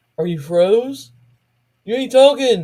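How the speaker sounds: shouting loudly. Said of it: "they were sitting there hollering".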